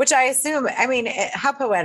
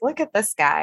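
plain

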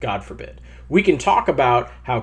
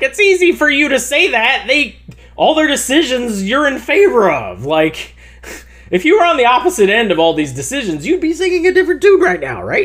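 yelling, higher and louder; 13 semitones higher, 5 dB louder than usual. Retelling what was screamed at a podcast while listening: retelling own screaming. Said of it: "screaming at them".

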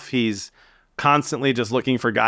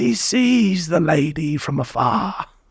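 put-on nature documentary narrator voice, pitched higher; 5 semitones higher than usual. Doing the documentary guy's lines again: David Attenborough impression. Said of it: "those are things he says".

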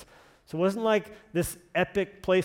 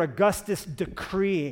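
ordinary talk

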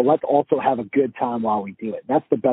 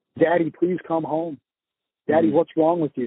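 mock crying in a much higher pitch; 4 semitones higher than usual. A father retells his son begging him to come home, imitating crying. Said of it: "and he's crying".

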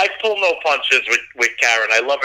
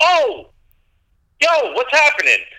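casual, higher-pitched Bronx street accent; 11 semitones higher than usual. Comparing brooklyn and bronx greetings, showing the bronx hello, bronx accent. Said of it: "When you're from the Bronx".

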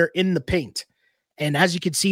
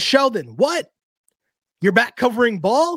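put-on all-caps yelling, higher-pitched; 5 semitones higher than usual. Reading out a friend's all-caps message to the listeners, retelling an all-caps yell. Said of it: "That's why I'm yelling".

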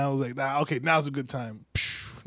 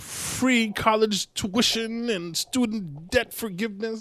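sarcastic tone, leaning hard on words; 8 semitones higher than usual. Listing the proposals she is making to the others: heavy emphasis, sounding sarcastic. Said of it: "Why you say, like, all sarcastic".

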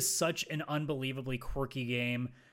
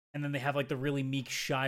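ordinary delivery

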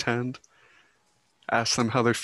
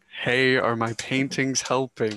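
normal talking voice

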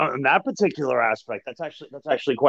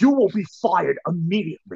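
mock livid, furious screaming, reined in; 3 semitones higher than usual. Retelling a meeting, quoting the boss screaming at everyone: imitating boss screaming livid.

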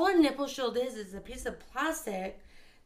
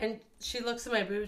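plain

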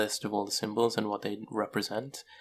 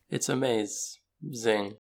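a maze stretched to sound like amaze, then zing. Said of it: "did you just hear what you just said?".

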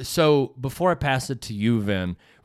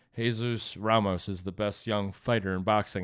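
play-acted, flat, monotone reading; 4 semitones lower, 6 dB quieter than usual. Imitating how Steve Farhood said a line: Steve Farhood, flat flashcard reading. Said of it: "the tone that Steve Farhood said that in was literally like he read the next flashcard".

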